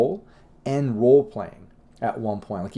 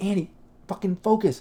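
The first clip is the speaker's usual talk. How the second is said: mock yelling, pitched-up; 8 semitones higher than usual. A director retells what he yelled at andy, retelling a yell. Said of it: "I like yell at him like".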